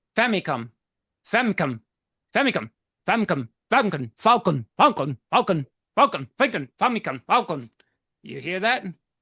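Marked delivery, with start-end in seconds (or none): 0.2-7.7 "falcon" said very quickly, in rapid-fire repetition. Demonstrating that Falcon sounds like Famicom, repeating the words really fast. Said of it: "try pronouncing Captain Falcon's name really fast".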